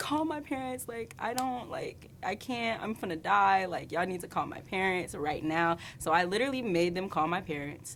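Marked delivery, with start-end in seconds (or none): 0.0-5.8 put-on crying while pleading. Recalling pleading with them to call the parents, retelling own crying plea. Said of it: "I was like literally crying".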